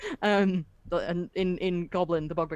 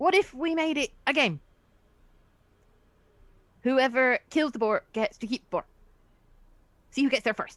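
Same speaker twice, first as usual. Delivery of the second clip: small, youthful goblin voice, pitched up; 6 semitones higher than usual. Voicing a small goblin who suggests making it a game: young goblin voice. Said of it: "in a voice that indicates that it's quite a young goblin".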